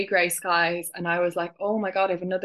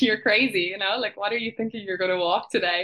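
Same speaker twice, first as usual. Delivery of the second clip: speaking while mock-laughing. Retelling how people reacted to the plan to walk, imitating them laughing. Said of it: "they're like laughing like".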